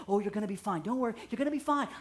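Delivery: mock tender, gentle, quick, comforting soothing voice. A lifeguard retells calming bleeding kids before a Band-Aid, retelling own gentle voice. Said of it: "I'm all gentle voice".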